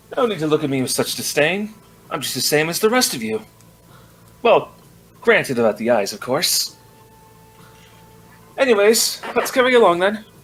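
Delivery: sassy in-character attitude. Voicing a character walking past guards who stare: sassy in-character speech. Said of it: "Oh, Garu, so sassy".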